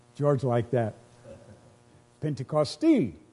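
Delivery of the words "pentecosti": Pentecosti with the final syllable leaned on. Repeating a word George liked, stress on final syllable of 'Pentecosti'. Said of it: "You put emphasis on the end of it".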